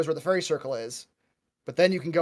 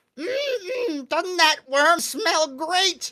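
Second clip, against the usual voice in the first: drawn-out, slow, very high goblin voice; 14 semitones higher, 3 dB louder than usual. Voicing a goblin praising the smell of a roasting worm: goblin voice. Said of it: "he just says".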